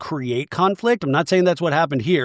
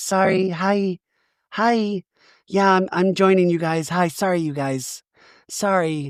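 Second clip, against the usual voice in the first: slow, unhurried, halting, drawn-out character voice. Retelling a castmate apologizing for arriving late, imitating Shannon's quiet voice. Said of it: "I like when Shannon has the quiet voice".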